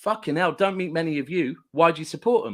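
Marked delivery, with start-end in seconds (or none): none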